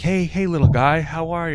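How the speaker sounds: put-on voice used toward a small child. Imagining a meeting with a Make-A-Wish kid, imitating Boogie greeting a kid. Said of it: "and then Boogie goes, he's like".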